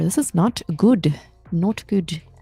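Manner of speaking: Indian-sounding English accent. Commenting that a market move is not going well: Indian accent. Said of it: "why are you Indian today?".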